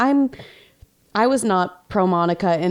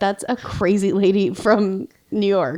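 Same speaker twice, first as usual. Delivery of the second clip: ordinary delivery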